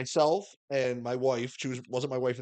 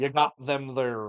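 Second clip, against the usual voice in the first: poor, fake put-on Texas accent. Imitating her practicing in the back before the border, bad put-on texas accent. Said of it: "use Texas accents".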